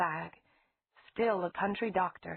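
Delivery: plain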